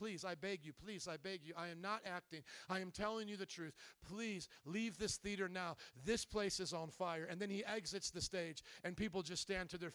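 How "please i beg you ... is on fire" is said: weeping, tearful, earnest begging tone. Retelling an actor's warning to a theater audience: imitating tearful pleading. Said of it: "He's pleading with the people".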